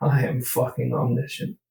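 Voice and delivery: said quietly, muttered under the breath. As the school bell rings, a role-play character speaks: muttered under the breath. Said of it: "I kind of say under my breath".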